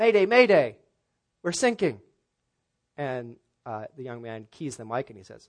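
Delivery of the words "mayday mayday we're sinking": put-on Australian accent with raised pitch. Telling a joke, voicing a distress call over the radio in an Australian accent. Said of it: "Sounds kind of like an Australian accent".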